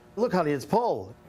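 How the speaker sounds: ordinary delivery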